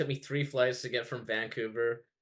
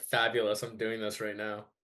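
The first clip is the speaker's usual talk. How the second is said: ordinary talk, nothing marked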